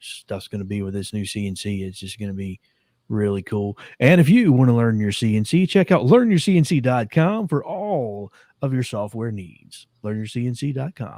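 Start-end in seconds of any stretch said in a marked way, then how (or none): 4.0-11.2 loud, put-on radio commercial announcer voice. Reading a joking sponsor plug for a website: put-on radio announcer voice. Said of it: "He's getting that radio voice down pat".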